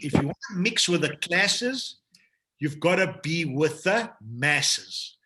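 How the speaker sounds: slight put-on touch of American accent. Quoting a saying about the masses in a compensation plan talk: slight put-on American accent. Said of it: "I'm going to put a little bit of an accent to this, but the Americans say it well".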